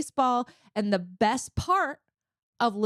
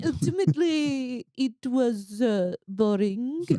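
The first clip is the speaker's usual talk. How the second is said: put-on French cook's accent. Reviewing a nacho like a Michelin-star critic, in an Eric Ripert French accent. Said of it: "That is like spot on French accent".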